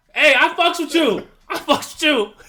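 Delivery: yelling in character. Yelling in character at another player's character: in-character yelling. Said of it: "I will yell at your guy".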